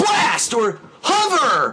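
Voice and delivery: put-on very high, swooping announcer yell. Retelling how the game's Wisp voice guy yells weapon types: imitating a yell. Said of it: "the guy yells your weapon type. Goes like".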